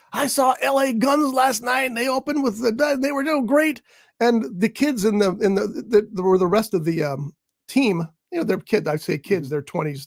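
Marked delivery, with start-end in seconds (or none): 0.1-3.8 mock proclaiming, loud, high announcing voice. The speaker retells a coworker buddy announcing news, in a loud announcing voice. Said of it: "announcing this loud voice".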